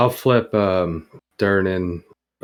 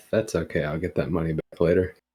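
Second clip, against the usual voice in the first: soft grumbled mutter under the breath; 2 semitones lower, 6 dB quieter than usual. Playing Misty, answering the man at the bar who winks: muttered under breath. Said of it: "I'll just say under my breath".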